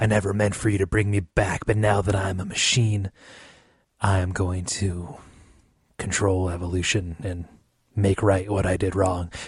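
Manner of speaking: put-on macho whisper. Imitating a poorly acted game character: masculine Keanu Reeves whisper. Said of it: "the masculine Keanu Reeves whisper".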